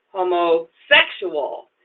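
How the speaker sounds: stress on sexual in homosexual. Showing how they say homosexual, stress on sexual. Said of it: "And the emphasis goes on sexual".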